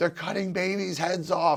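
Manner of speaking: mock high-pitched screaming. Recalling family pushback, acting out the mother screaming at the speaker. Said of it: "my mother screaming at me".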